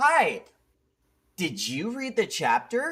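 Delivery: put-on very high, slow, swooping kids-show sing-song voice. Asking a silent guest about the chapter, imitating Dora the Explorer. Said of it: "it's like watching an episode of Dora the Explorer".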